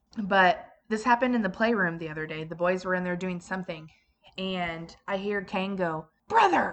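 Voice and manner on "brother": mock fed-up kid voice, very high and loud. Retelling a child calling out to his brother: imitating a frustrated child. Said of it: "all frustrated".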